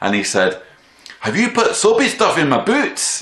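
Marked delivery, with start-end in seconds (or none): 1.2-3.2 put-on very high, loud, angry, accusing Scottish accent. Retelling what a Scottish man asked the speaker, in a Scottish accent. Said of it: "So here's my Scottish accent".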